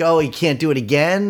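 plain

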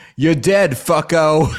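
put-on New York accent. Retelling a character's line as he shoots another man, New York accent. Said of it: "He's got like this fucking New York accent".

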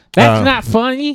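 very high, yelling voice. Retelling a roast where he kept yelling at people: Mike Tyson impression. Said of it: "he kept just yelling at people".

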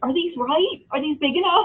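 mock anxious, fretting voice. Retelling questions from a wife baking cookies: imitating a stressed-out wife. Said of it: "she's stressing out about getting it wrong".

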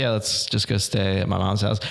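ordinary talk, nothing marked

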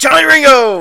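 very loud, booming call at full volume. Saying the name again when asked for a proper Powers Boothe voice. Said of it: "in the proper Powers Booth voice".

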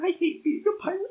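very high, very soft, hushed whisper. Role-playing a character crying into a companion's arms again: whispering. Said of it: "And I whisper".

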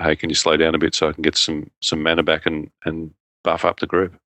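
normal talking voice

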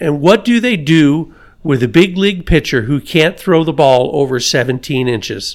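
usual speaking voice

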